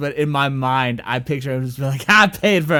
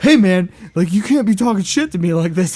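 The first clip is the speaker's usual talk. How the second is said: put-on pitched-up, indignant, angry child voice; 5 semitones higher, 4 dB louder than usual. Retelling how a kid reacted to a heckler: imitating an angry kid. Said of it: "kid got pissed and was like".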